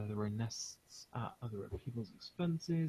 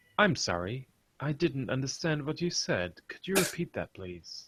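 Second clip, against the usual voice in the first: very loud, mechanical robotic assistant voice; 4 semitones higher, 9 dB louder than usual. Answering a question, the speaker gives a response in Siri voice. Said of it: "I'll do my best Siri response".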